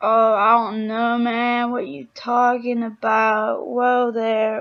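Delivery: deep, slow, put-on surfer-dude drawl. Speaker shows how they talk on seeing someone attractive, in a stereotypical surfer-dude accent. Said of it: "surfer dudes".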